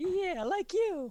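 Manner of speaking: very high, very loud, sarcastic jeering taunt. Voicing Tareth throwing a rock at a dead goblin: mocking the dead goblins. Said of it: "big strong man mocking the dead".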